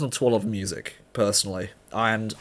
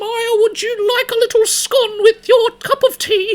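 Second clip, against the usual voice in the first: put-on posh British granny voice, very high and loud; 7 dB louder than usual. Recalling childhood tea with a grandmother, imitating a posh grandma. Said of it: "She did not sound like that".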